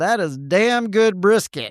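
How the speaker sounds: put-on Texan accent. Retelling tasting smoked brisket in chili: Texas accent. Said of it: "in my best Texas accent".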